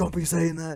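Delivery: play-acted yelled scolding, high and loud. Retelling how the mom answered: imitating someone yelling. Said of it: "yelled at me".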